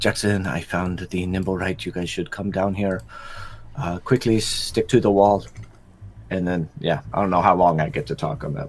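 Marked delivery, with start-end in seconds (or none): 0.0-5.4 quiet, hushed stage half-whisper. Sending a message to Jackson through a magic device: half-whisper. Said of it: "and I'll whisper this".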